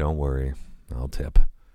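muttered remark. Nikolai, sitting in the front seat, mutters to the driver: muttering. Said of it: "he muttered to the driver".

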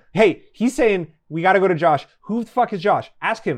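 panicked, loud, rushed freaking-out outburst. Player in a role-play scene, stuck in a car, freaking out. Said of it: "I'm freaking out".

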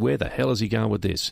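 ordinary talk

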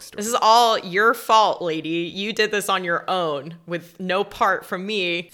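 loud, drawn-out, mock dripping utmost sarcasm. Acting out a remark made to a lady, retelling a sarcastic line. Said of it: "Said with the utmost sarcasm ever".

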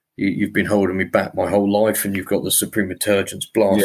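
ordinary talk, nothing marked

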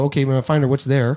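ordinary talk, nothing marked

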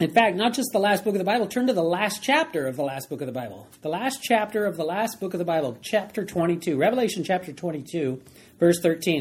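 normal talking voice

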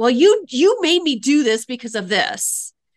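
loud, snarling, defensive and accusing tone. Describing the bottom of the responsibility ladder, the speaker demonstrates snarling. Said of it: "we're like snarling".

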